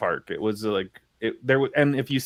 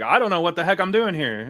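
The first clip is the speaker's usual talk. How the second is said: mock confused, clueless rambling, higher pitched; 8 semitones higher than usual. Acting out someone waving their arms in panic: imitating someone clueless. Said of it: "you might as well have been like".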